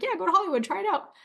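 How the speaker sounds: high, casual, approving parent voice.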